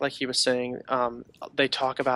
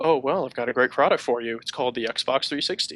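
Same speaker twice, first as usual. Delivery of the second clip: said with open sarcasm. Retelling the reply to a player stuck overseas on a boat, mock sarcastic tone. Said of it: "And they sarcastically go".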